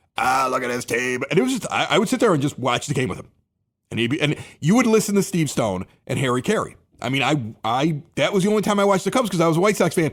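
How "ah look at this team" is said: low, mechanical, artificial electrolarynx voice. Recalling watching ball games with him, imitating an electrolarynx voice. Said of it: "He had a talker because he had had his voice box removed".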